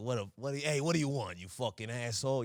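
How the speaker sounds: put-on New Jersey accent. Retelling asking for the manager, playing the guy who comes up; dingy New Jersey guy impression. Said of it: "some dingy American guy from New Jersey".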